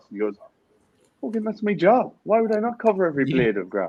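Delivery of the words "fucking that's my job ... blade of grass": put-on very high, swooping, sing-song Irish accent. Retelling a pundit's reply about covering every blade of grass: imitating Roy Keane's Irish accent. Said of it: "I thought that was a brilliant accent".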